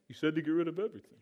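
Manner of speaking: deliberately put-on dopey, dumb voice. Retelling what a man said before surgery, the speaker uses a dumb voice. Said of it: "That's my dumb voice".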